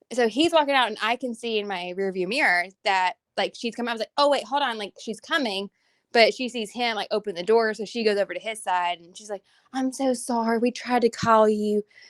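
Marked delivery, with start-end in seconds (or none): 9.7-11.8 put-on slow, thick Southern accent. Retelling what she said when she came over to his side, in a delightful Southern accent. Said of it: "very delightful Southern accent".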